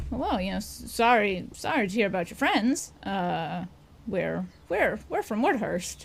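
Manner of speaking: overly friendly, a little too friendly tone. A game master voices an armed guard greeting the players, overly friendly. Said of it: "All three of you just get this feeling like, this guy's maybe a little too friendly. / he's wearing kind of ramshackle leather armor. You can see sheathed on his side is a scimitar, and kind of on his".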